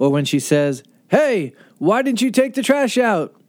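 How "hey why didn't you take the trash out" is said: strong, no-nonsense, loud, direct, high scolding voice. Imitating a mom calling her child, loud direct mom voice. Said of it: "that voice when your mom tells you".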